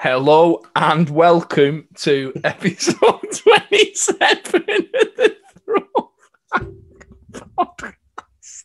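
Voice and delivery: giggling through words. Opening the podcast episode while laughing too hard: laughing while talking. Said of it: "I'm crying, laughing".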